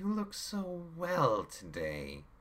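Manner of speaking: very high-pitched, syrupy, lilting, sing-song sweet voice. A man replies to Rachel; sweetly. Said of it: "he replied sweetly".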